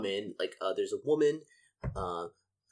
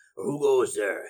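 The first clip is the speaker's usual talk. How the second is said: rough, gruff sentry voice; 4 dB louder than usual. A narrator voicing a guard at the keep's closed doors, gruff guard voice. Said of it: "One of the guards asks in a gruff voice".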